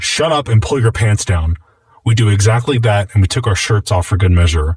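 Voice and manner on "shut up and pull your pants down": ordinary talk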